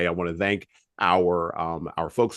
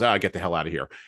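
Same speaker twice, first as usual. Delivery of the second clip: imitated prickly, brusque corporate man voice. Quoting a movie character brushing off a warning: imitating a prickly corporate man. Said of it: "who's all prickly and corporate".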